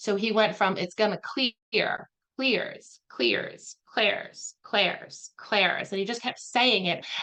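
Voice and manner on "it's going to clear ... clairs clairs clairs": slow, put-on, almost Southern drawl on "clear". Retelling how Neil kept repeating one word: Neil's almost Southern accent. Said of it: "almost like a Southern accent on it".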